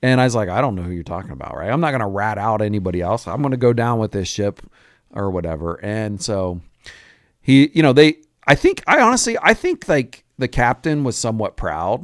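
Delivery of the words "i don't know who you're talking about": low, quick, mock tone with almost a chuckle. Retelling his own reply when questioned, retelling a chuckling reply. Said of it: "it's like a chuckle almost".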